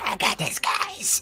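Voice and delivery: slow, whispery, dissonant goblin voice. Player voices a goblin character in a tabletop game, dissonant-whispers goblin voice. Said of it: "do the like dissonant whispers goblin voice".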